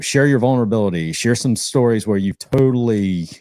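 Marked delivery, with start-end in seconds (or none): 0.0-1.1 said much faster, rushed through. Advising listeners on storytelling, saying a word they can't say slowly: said fast. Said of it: "I can't even say that word slowly".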